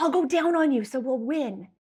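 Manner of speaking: put-on whispering voice. Retelling what a contest partner said in line: imitating someone whispering. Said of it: "she whispers in my ear".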